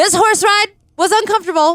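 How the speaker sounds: very high-pitched, loud, griping complaining voice. Asked by the DM, the speaker obliges with a Cole impression. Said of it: "Insert impression of Cole here".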